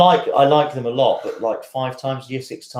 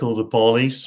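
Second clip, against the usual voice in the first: accent of the American South. Discussing how accents say words, demonstrating a southern accent. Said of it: "or you could do a southern accent".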